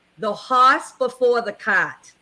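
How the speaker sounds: put-on New England accent. Repeating an expression for the listener, in a New England accent. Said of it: "I'm going to say it in my New England accent".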